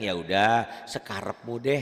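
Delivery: ordinary talk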